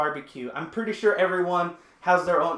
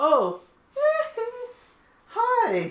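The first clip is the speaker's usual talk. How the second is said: very high put-on voice with swooping pitch. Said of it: "I kinda had to [name] my way out of this".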